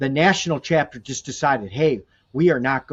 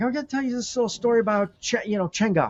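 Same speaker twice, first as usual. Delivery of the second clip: put-on pitched-up old-timer storyteller voice; 8 semitones higher than usual. Retelling how a friend announced a story: imitating a grandpa manner. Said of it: "he said it in such a grandpa manner".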